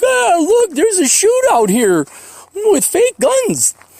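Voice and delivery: very high, slow, mocking tourist voice.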